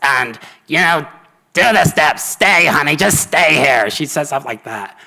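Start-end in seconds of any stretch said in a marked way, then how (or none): 0.7-3.9 raised, buzzing electrolarynx voice-box sound. Describing a woman from a meeting who spoke through a neck microphone: imitating Mary's voice. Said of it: "her voice sounded like this".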